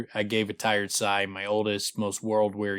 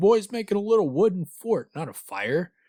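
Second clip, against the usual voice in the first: play-acted, very high-pitched, derisive mocking tone; 10 semitones higher, 4 dB louder than usual. Retelling how a man cut in on others, imitating a mocking tone. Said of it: "comes in just completely mockingly".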